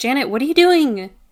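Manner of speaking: loud, high, carrying call in a character voice. Calling out in character to Janet across the ballroom: yelling out. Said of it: "I'm gonna yell out and be like".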